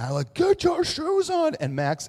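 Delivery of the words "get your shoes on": very high, loud, intense yelling. A dad retelling how he would finally yell, retelling his own yell. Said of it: "I would then yell".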